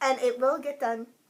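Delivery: little, tiny chipmunk voice. Podcast co-host talking about Jamie's knitting project, little chipmunk voice. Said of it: "little chipmunk voice".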